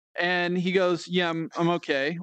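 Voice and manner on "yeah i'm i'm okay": mock flat, monotone voice. Retelling how a skinny guy answered whether he was having fun, imitating a monotone reply. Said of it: "Like very monotone".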